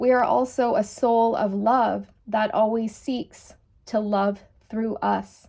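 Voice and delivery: choked-up voice, words catching with emotion. Finishing a spiritual message to listeners, choked up. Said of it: "I'm actually getting choked up here".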